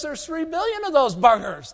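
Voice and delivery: high mocking Texas cotton grower voice.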